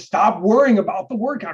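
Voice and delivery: coach-like yelling. Retelling a sister's writing advice: imitating sister yelling like a coach. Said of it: "yelling at me, like, lecturing me like a coach".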